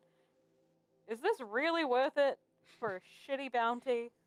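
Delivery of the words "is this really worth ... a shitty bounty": slow, loud yelling. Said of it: "I just yell out".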